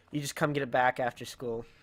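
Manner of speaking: ordinary delivery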